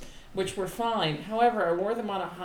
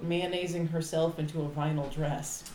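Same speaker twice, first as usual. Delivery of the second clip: normal talking voice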